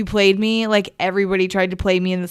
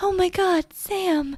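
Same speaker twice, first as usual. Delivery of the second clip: put-on whispery, breathy, delicate old-film actress voice, much higher; 12 semitones higher than usual. Imitating how women in 1940s films talk: whispery, delicate old-film woman. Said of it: "whispery and delicate".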